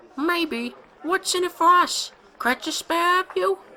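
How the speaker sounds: rough, raspy, very high falsetto. Narrator reading the little creature's reply: rough, oddly high, almost falsetto voice. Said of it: "as rough as he'd expected, but oddly high, almost falsetto".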